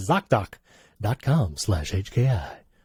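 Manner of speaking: morning FM radio announcer voice. Repeating the web address at the end of an ad, morning fm radio voice. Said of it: "One little uh, morning F M radio voice for that one".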